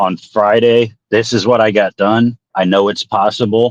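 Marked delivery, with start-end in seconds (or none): 0.0-2.4 calm, polite, even-keeled, cordial tone. Recounting telling him what got done on friday, recreating a calm, cordial tone. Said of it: "I spoke to him in this voice right here. I was as calm and like cordial as possible".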